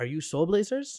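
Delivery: heavy, thick put-on French accent. Retelling a fan's question at an event: imitating a thick French accent. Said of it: "with, like, a thick French accent was like".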